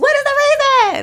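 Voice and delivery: very high, loud, stretched-out, drawn-out delivery. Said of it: "in my [name] voice".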